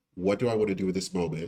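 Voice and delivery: plain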